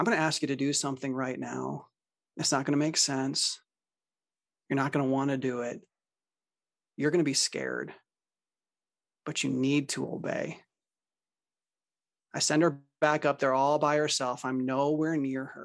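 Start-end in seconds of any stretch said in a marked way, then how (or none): 0.0-10.6 hushed, quiet, soft one-to-one delivery. Retelling what the speaker told the girl, in a quiet tone. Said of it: "I say in a quiet tone".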